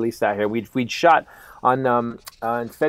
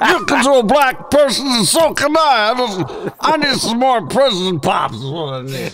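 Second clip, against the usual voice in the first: put-on slurred voice, higher and louder; 11 semitones higher, 6 dB louder than usual. Continuing the joke: roofied Bill Cosby impression. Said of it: "that was roofied Cosby".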